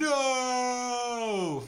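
high, shouted, anguished cry of "no". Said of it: "Luke Skywalker yelling".

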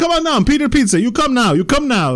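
very high, loud, pushy, aggressive all-in hype. Retelling a pizza shop owner's direct-to-camera videos: imitating a big, aggressive pizza seller. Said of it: "Very big, like, oh, he was way into it".

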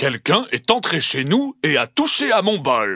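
large bear voice. Narrator reading the three bears story, voicing the father bear: Papa Ours roaring big voice. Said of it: "Il rugit de sa grosse voix".

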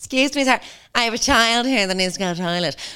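put-on high-pitched motherly woman's voice. Imagining a mum on a flight asking to use the toilet: imitating a mum on a plane. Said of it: "Some mum's gonna be like".

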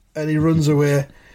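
ordinary delivery

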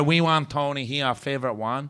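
exaggerated, put-on caricature of a Korean accent. Retelling what tour guests kept asking for: imitating a mocking Korean accent. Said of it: "Sorry about the racist voice".

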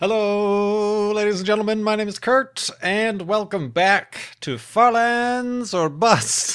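showy auctioneer-style delivery. Opening his show's episode, greeting the audience like an auctioneer. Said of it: "That was kind of a auctioneer's intro".

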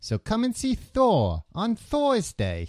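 put-on Brooklyn or Jersey accent, very high, swooping. Imagining some guy in a movie commercial: brooklyn or jersey accent. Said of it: "with like a Brooklyn or Jersey accent".

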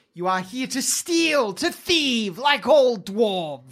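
high, sibilant, serpent-like hissing dragon voice. The narrator voices a creature confronting the party, hissing creature voice. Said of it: "it hisses".

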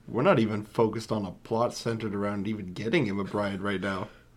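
ordinary talk

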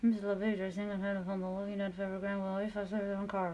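fast, flat delivery with lips barely moving.

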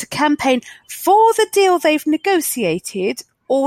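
high, slow, pained delivery. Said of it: "you can hear the pain in my voice".

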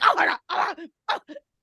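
acted, slow, high laughing and crying at once. Retelling how a mother reacted watching a show: imitating someone laughing while talking. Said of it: "My mother's cry laughing".

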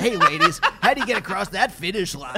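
drive-time radio DJ style host patter. Mocking how the other person announced moving in together, drive-time radio DJ voice. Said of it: "Like a drive like time DJ".

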